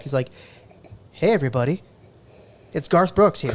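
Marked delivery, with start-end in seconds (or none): 1.1-3.5 flat, emotionless put-on voice. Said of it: "no emotion, no anything".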